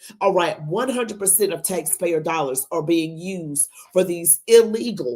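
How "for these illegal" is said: "illegal" strongly stressed, hit hard. Complaining about taxpayer dollars, deliberately stressing one word: strong emphasis on illegal. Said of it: "I put emphasis on the word illegal".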